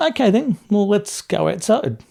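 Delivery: acted easy-going tone. Recalling someone who misjudged the situation, the speaker retells a calm, smiling reply. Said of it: "I said it in that way".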